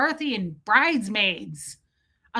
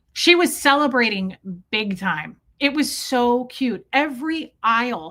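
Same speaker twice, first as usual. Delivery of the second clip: ordinary talk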